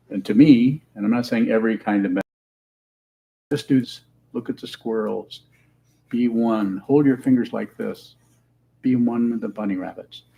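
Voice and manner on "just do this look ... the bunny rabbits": ordinary delivery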